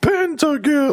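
shrill, loud, very high game-announcer shout. Imitating the old League of Legends pentakill sound: imitating a loud game announcer. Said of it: "it was loud".

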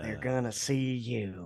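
quiet, cool gangster voice. Trying out a voice for the group, Leonard Snart voice. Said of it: "That's a pretty good Leonard Snart voice".

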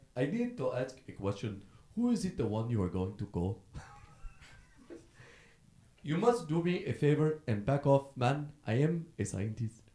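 practiced, put-on Nigerian English accent. Pitching a Nigerian Ghostbusters remake, voicing its characters in a put-on Nigerian accent. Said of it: "break out your Nigerian accent you've been working on".

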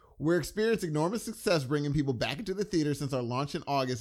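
ordinary talk, nothing marked

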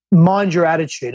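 ordinary delivery

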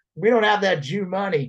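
bold, unguarded, said right out. Retelling what a man said about funding: imitating a man saying it loud. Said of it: "says it loud first".

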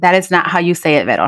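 plain

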